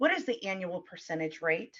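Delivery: mock utterly earnest, low, dead-serious tone. Retelling a young daughter asking the bank lady a question: imitating daughter dead serious. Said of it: "dead serious".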